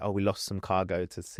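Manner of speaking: ordinary talk, nothing marked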